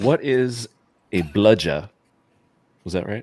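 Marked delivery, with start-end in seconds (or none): 0.0-1.9 slow, attempted Australian accent. Speaker reads out a submitted question: trying to do the accent. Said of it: "I'm going to try to do it with the accent".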